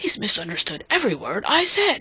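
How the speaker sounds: whispered under the breath. A man reacts to a speech he has just heard, whispered. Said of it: "he whispered".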